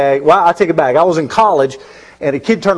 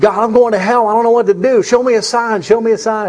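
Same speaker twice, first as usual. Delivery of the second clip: mock, high, tearful pleading cry; 5 semitones higher than usual. Retelling calling out to God for a sign: retelling a tearful prayer. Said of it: "and I'm crying".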